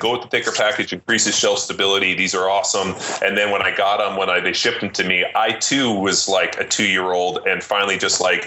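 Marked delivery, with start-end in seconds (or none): none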